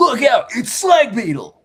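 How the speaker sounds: very high, shrill, loud nineties cartoon announcer voice. Imitating a nineties cartoon intro for a character named slag beetle: nineties cartoon announcer voice. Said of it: "sounds like a nineties character".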